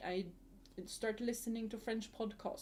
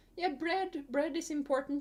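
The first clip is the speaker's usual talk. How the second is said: put-on Midwestern accent, loud and high-pitched; 6 semitones higher, 7 dB louder than usual. Explaining a smörgåsbord to listeners who don't know it, midwestern accent. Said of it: "That's a great Midwestern accent".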